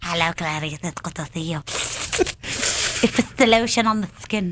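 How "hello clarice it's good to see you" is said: movie-villain voice, low, hushed, soft and rapid. Joking that the other speaker was this character at age five, do a Hannibal Lecter impression. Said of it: "you think you can do good impersonations?".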